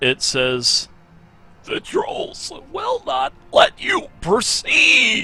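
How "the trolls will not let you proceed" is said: very high, froggy creature voice. Game master voices a scribing creature speaking Draconic; frog-like voice. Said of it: "in this frog type of voice".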